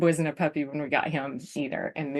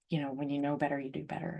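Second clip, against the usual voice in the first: quiet, soft repetition with pitch dropping. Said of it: "but once again".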